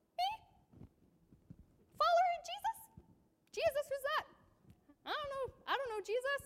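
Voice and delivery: put-on squeaky voice. Retelling Peter being asked if he follows Jesus: Peter's little voice squeak. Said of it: "Peter kind of gets like this little voice squeak".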